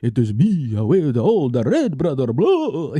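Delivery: slow, swooping vampire voice. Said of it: "stereotypical Dracula".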